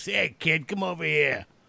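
deep put-on New York accent. Asking a guest whether people there all talked like this, deep New York accent. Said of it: "did they all have these like really deep New York accents".

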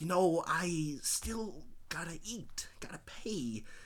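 soft, whispered delivery. Performing a quoted response for the others, whispering. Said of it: "And I'll do it whispering".

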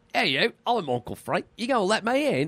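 put-on loose, Australian-ish accent. Imitating how a British actor dubbed Uncle Frank's lines, in an Australian-sounding accent. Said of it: "that's a little more Australian".

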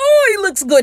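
high, loud gushing squeal. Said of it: "I'm sorry".

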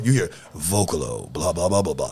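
very deep, rock-bottom low radio announcer voice. Imitating a friend's radio station voice: imitating Dirty's deep voice. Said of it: "Dirty got the deepest voice".

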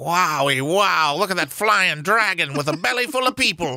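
put-on very high, gushing, old-timey gee-whiz wonder. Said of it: "[name] is like".

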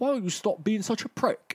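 put-on fake British accent. Acting out a comic scene, quoting the character Crowley: Crowley in a fake British accent. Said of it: "Stop talking in a fake British accent".

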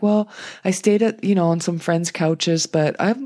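ordinary talk

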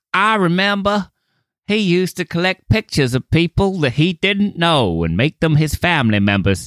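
high, homespun Southern woman voice. Riffing in conversation, imagining how a woman would describe him, homespun woman voice. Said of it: "some homespun woman being like".

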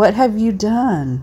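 put-on tiny, haunting, eerie toddler voice. A mom quoting her 2-year-old's question, in a tiny, haunting child voice. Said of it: "asking in a tiny, haunting voice".

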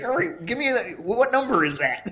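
put-on flustered announcer voice. Picturing the announcer asking for notes on the horse: imitating a flustered race announcer. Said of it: "He's like".

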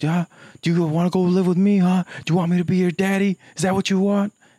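acted-out drill-sergeant yell, shrill and very high-pitched. Retelling a talk show where a sergeant yells at a kid: imitating a drill sergeant yelling. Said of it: "he's yelling at the kid".

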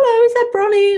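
play-acted, very high, sunny, chirpy voice. Retelling a phone call from a stranger: imitating a chirpy voice. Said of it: "it was just this really chirpy voice".

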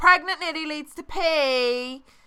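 speaking loudly. Retelling what the sister-in-law would say at the aunt's house, saying it loudly. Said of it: "sister-in-law would loudly say".

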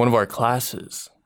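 sultry, seductive, sexy voice. Reading into the mic, the speaker redoes the opening words in a sexy voice. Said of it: "make this sound a little sexier".

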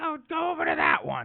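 sing-song, high-pitched character voice.

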